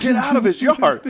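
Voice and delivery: shrill, very high, loud scream. Retelling yelling at a dog to come back: imitating someone screaming. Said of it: "I am screaming".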